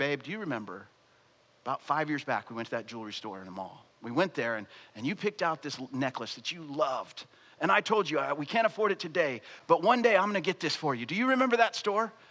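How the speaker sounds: totally unruffled, easygoing, super calm low voice. Telling a story, acting out a man answering a woman's phone call in a super calm voice. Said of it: "Super calm voice".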